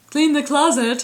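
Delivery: fake, put-on male voice. Imitating the husband telling her to clean the closet: put-on man voice. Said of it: "Do you like my man voice there?".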